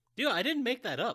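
very high defensive tone. Answering another speaker while discussing an Uncharted game, defensive. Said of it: "Don't get defensive about it".

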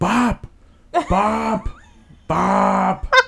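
acted, very high, shrill, rough, drawn-out panicked screaming. Retelling how, as a young child, they screamed when she choked, retelling a panicked scream. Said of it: "So I just start screaming".

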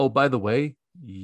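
ordinary talk

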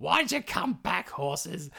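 put-on furious witch voice. Retelling a fairy tale, voicing Baba Yaga at the returned horses: furious Baba Yaga voice. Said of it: "Baba Yaga is ropeable".

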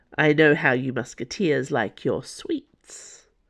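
ordinary delivery

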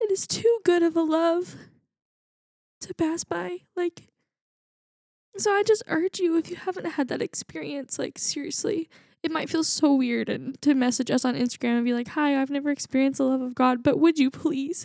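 crying while speaking. A speaker addresses listeners after admitting to getting emotional, tearful. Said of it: "got us all crying here".

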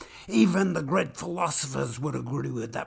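plain reading voice

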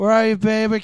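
put-on slurred speech like a drunk. After announcing a drunk impression to everyone, a slurred drunk voice. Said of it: "I'm going to do a drunk impression, but not a character impression".

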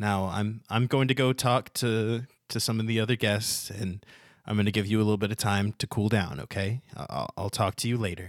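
ordinary talk

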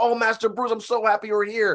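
very high, thrilled, overjoyed, gushing voice. Retelling a film scene where he wakes from a coma: imitating Alfred sounding so happy. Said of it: "he wakes up and he's so happy".

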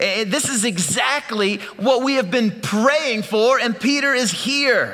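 high-pitched, bursting with uncontainable excitement.

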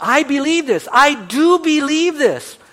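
shrill, booming, very loud, slow drawn-out yell. Retelling a funeral where a man on the front row yells: imitating a man yelling. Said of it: "he yells out".

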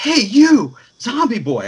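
very high, swooping, sing-song, drawn-out yell. Retelling calling out to someone across a crowded hall: imitating his own yell. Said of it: "I yelled at him from across the hall".

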